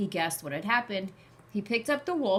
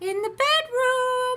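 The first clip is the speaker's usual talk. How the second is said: odd, strange quavering, wobbly voice, very high; 8 dB louder than usual. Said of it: "replied the wolf in a strange, wobbly voice".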